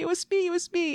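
reenacted screaming. Retelling screaming at a man cleaning up toilet paper; retelling a scream. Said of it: "I keep screaming".

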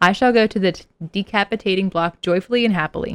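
ordinary delivery

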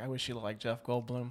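whisper under the breath. Retelling what she said right before they said i do: retelling a whisper under her breath. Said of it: "whispered under her breath".

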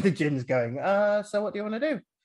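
put-on nonchalant voice. Speaker showing how they keep voicing the gin character: put-on nonchalant gin voice. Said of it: "I keep giving the gin this nonchalant voice".

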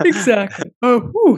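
words spoken through a high-pitched yawn. Mid-conversation, the speaker yawns while agreeing with the other host. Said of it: "Sorry, a little yawn there".

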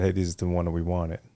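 ordinary talk, nothing marked

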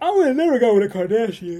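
very loud speech through a yawn. Talking about celebrity relationships, the speaker goes on: yawning while talking. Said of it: "I'm yawning and talking at the same time".

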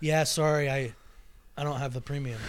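mock-sheepish delivery. Retelling his reply when asked if he lives like this, imitating a sheepish reply. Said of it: "He says so sheepishly".

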